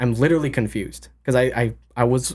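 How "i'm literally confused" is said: ordinary delivery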